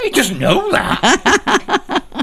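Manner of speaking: very high, slow, squeaked out through laughter, mock.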